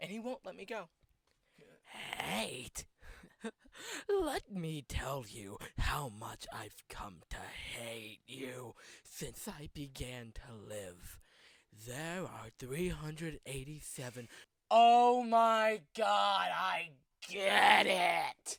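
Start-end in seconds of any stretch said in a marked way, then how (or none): 2.2-14.3 put-on character monologue voice, lower pitch. Retelling a monologue said by AM from I Have No Mouth and I Must Scream: AM voice. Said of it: "Am from I Have No Mouth and I Must Scream".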